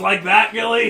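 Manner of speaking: loud, high taunting.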